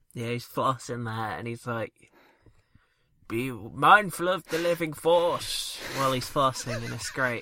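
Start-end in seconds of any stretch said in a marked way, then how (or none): 3.3-5.8 slow, deliberate, drawn-out character voice. Describing a film character flossing, in an Obi-Wan voice. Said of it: "I did my Obi-Wan voice there instead".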